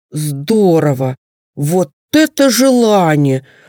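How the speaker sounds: rapturous exclamation. A bear cub hears the wish and exclaims at it: rapturous exclamation. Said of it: "восторженно воскликнул медвежонок".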